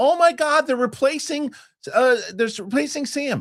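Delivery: mock panicked screaming.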